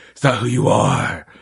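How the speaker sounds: stupid, silly superhero movie voice.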